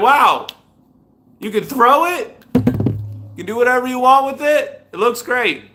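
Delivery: cheerful, high, happy talking-apple voice. Showing off a good apple and voicing it: voicing a happy apple. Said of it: "Look at this one. He's like".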